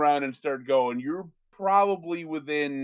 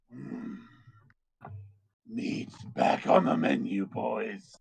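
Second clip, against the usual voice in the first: slow, breathy, whispered, growling dragon voice; 4 semitones lower, 5 dB quieter than usual. Voicing a dragon that lands in front of the galloping party: dragon speaking draconic. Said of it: "in its inner draconic tongue".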